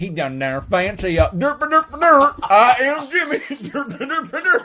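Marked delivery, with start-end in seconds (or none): 1.2-4.7 loud, very high, slow, goofy, dopey booming voice. Make fun of your good pal, a television critic who is really loud, with a loud imitation of Jimmy. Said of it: "because he's really loud".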